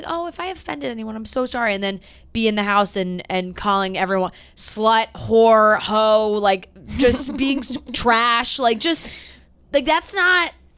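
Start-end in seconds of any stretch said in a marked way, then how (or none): 0.1-1.7 put-on soft, sugary, sweet girly voice. Mocking a woman's apology on Good Morning America, in a mock sweet girly voice. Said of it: "She turns on the sweet girl voice".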